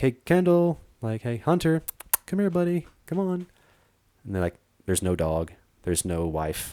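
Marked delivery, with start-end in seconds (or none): 0.0-3.5 very high, mock calling-out voice. Retelling hiking back to find his wife and dog, retelling calling out. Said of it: "I'm just calling for my wife".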